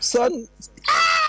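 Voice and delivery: scream in a big man's voice. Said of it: "you never hear a big man scream".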